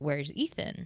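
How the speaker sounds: put-on Filipino accent. Retelling what an uncle from out of town asked: imitating a Filipino accent. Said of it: "he's Australian with a Filipino accent".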